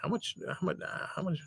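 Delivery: soft, unvoiced whisper.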